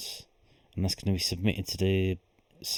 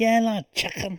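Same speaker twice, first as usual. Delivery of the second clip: very high, loud, silly put-on comic voice; 6 dB louder than usual. Doing voices in a comedy bit before a listener complains, put-on comedic voice. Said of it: "Talk in your normal voice".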